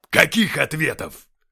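very loud, gruff barking voice. Narrator reads a character snapping back during an argument, barking. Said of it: "рявкнул Деймос".

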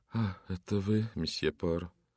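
muttered, mumbled. Narrator reads Mrs Foliat greeting Poirot as he enters the drawing room, muttered. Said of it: "пробормотала".

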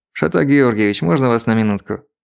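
ordinary delivery

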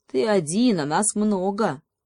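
usual speaking voice

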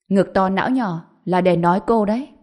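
usual speaking voice

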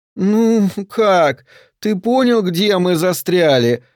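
high-pitched, bored, whiny drawl. A woman stuck on a dirt road with her companion speaks; bored whiny drawl. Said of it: "протянула Вероника своим скучающим плаксивым голосом".

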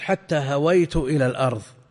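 ordinary talk

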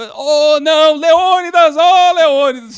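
high, loud, drawn-out movie-style scream.

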